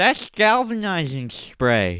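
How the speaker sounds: loud, high-pitched, bouncy lisp on the s sounds. Speaker repeating a line while rating it, Sid the Sloth lisp. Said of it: "A lisp like that always makes it better. Like Sid the Sloth lisp".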